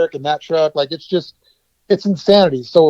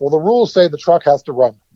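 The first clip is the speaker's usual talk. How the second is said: normal talking voice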